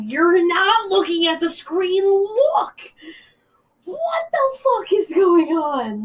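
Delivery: overexcited yell, high with swooping pitch. Retelling yelling at someone to look at the screen: retelling an excited yell. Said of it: "I audibly yelled at him to look up".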